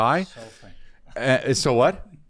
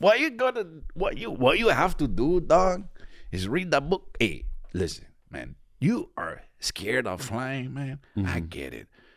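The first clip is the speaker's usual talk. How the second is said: strained, quieter put-on Mexican accent; 5 dB quieter than usual. Giving advice on fear of flying in a put-on voice: put-on mexican accent, strained. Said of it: "Why is your Mexican voice someone under immense physical strain?".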